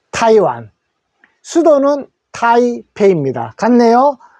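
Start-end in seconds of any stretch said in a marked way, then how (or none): 0.1-0.7 타이완 with first syllable 타 said big. Korean lesson on country names, reading Taiwan aloud: stress on ta in Taiwan. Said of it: "타이 할 때 타에 크게 읽어 주시면 됩니다".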